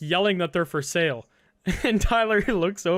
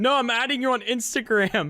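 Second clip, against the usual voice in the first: mock, pitched-up, bickering, arguing tone; 6 semitones higher than usual. Retelling a drunk girl insisting she is on instagram: imitating someone arguing. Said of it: "arguing with him while she's typing".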